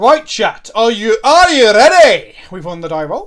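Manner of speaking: put-on terrible Scottish accent. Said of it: "That was a terrible Scottish accent".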